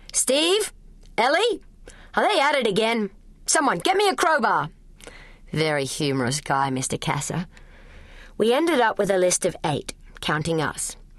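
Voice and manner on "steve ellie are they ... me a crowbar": very high, roaring bellow. Mr. Casser bellows at Steve and Ellie during school play rehearsals. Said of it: "started bellowing".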